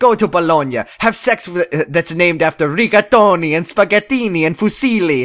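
exaggerated Italian accent. Quoting a line from the show: Adrian's super Italian accent. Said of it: "super Italian accent".

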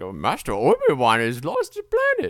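animated, theatrical character voice, pitch swooping around. Retelling a film scene where Yoda answers: Yoda voice. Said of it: "sound like Yoda".

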